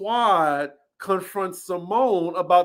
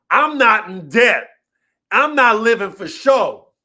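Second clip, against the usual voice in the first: loud, heated, full-on yelling outburst; 3 semitones higher, 6 dB louder than usual. Retelling what a cast member kept saying in an argument: imitating someone yelling. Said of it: "Simone keeps yelling about".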